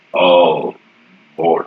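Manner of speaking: voice booming like thunder. Narrating a game scene, a figure looks out and cries in a booming thunderous voice. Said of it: "His voice booming like thunder".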